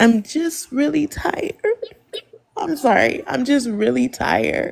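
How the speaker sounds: talking through tears. Speaking to a group about not being respected, crying while talking. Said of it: "Are you really crying?".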